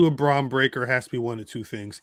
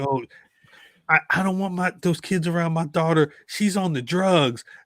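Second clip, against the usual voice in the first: put-on fretting, disapproving, concerned grandmother voice; 3 semitones higher than usual. Joking about freeing a friend, playing a concerned grandmother: put-on concerned grandmother voice. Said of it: "like a concerned grandmother".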